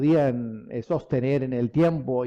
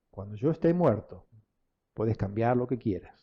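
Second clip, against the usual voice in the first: mock calm, matter-of-fact, low and even delivery; 4 semitones lower, 4 dB quieter than usual. Speaker repeats what their father told them, imitating father's unangry tone. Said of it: "lo dijo con este tono que yo les voy a repetir".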